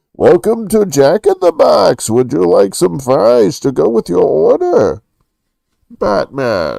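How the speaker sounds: very loud, high, rough, barely intelligible mumbled bellow. Talking about a movie villain, the speaker slips back into a Bane impression. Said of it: "they needed subtitles for Bane".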